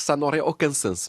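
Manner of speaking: put-on Portuguese accent.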